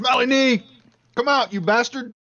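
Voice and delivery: angry, high, loud yell. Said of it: "So he's gonna yell".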